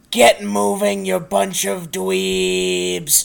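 booming, rough voice sounding from far off. Narrating the game, voicing something calling to the group: booming voice from far off. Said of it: "the booming voice of something far off".

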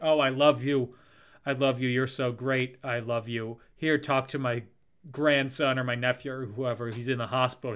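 normal talking voice

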